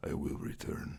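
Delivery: threatening unvoiced whisper.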